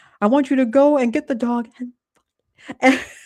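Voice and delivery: acted high scream. Recounting a scam call, speaker acts out the scammer: retelling a scream. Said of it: "he was screaming".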